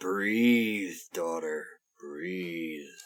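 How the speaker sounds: deep, low, hushed mutter under the breath. A player voices their character, muttering under breath. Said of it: "I mutter under my breath".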